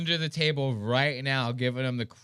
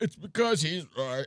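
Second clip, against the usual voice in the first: breathless, gasping for air while speaking; 3 semitones higher than usual. Mocking a man in a video who sounds out of breath: imitating Andrew Tate's breathless voice. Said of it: "It sounded like he's about to die".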